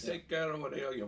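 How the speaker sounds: put-on Jamaican accent. Voicing a character offering a jungle healing draft: jamaican accent. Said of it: "Jamaican voice".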